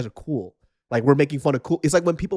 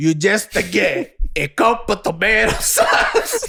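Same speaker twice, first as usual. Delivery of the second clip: put-on thick Italian accent, higher pitch; 6 semitones higher than usual. Answering a question as Italian Robert Malone: Italian-accented Robert Malone. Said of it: "Italian Robert Malone".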